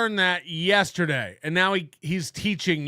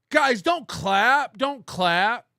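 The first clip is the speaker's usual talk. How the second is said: mock restrained yell, mild and drawn out; 4 semitones higher than usual. Imitating the other speaker telling a fake-clapping button to stop: imitating someone yelling. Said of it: "Why are you yelling at your button?".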